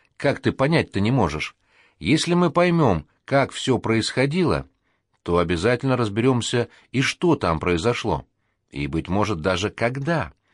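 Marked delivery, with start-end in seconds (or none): none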